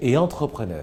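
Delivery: pitch falls at the end of entrepreneur. Ending a list of three items with a full stop: falling pitch on entrepreneur. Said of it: "Quand c'est le point, je chute".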